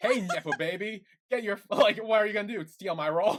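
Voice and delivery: high, very loud, aggressive, intense jeering voice. Retelling what Dean said on coming in: imitating Dean's aggressive taunt. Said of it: "Dean comes in hot and heavy".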